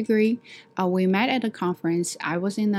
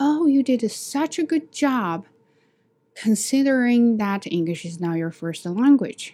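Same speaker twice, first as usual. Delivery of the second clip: mock condescending, patronising tone; 4 semitones higher, 3 dB louder than usual. Retelling a colleague's backhanded praise: imitating a condescending tone. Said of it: "she always said it to me with a condescending tone".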